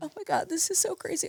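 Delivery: soft, tearful speech, voice cracking. Telling the host their weekly work is life-changing, crying, voice breaking. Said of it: "I'm crying".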